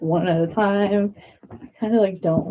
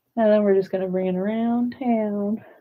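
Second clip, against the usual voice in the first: Southern American accent slipping in. Guiding a stretch, bringing the movement around: southern accent. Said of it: "Here I am with that southern accent again".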